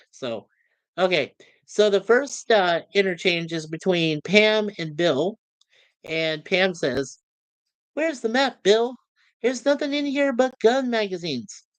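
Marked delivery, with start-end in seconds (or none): 7.9-11.6 woman's voice pitched up high. Reading a script interchange between Pam and Bill: high voice for Pam. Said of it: "with female parts, I can't help it. I have really high voice".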